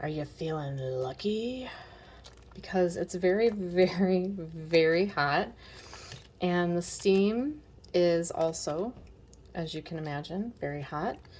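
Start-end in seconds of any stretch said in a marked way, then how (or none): 0.0-1.7 put-on gruff voice. Mashing very hot apples while cooking, asking yourself in Clint Eastwood voice. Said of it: "in a Clint Eastwood voice".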